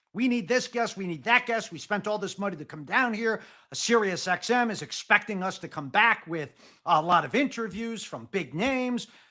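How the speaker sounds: ordinary talk, nothing marked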